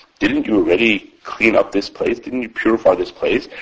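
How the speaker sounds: normal talking voice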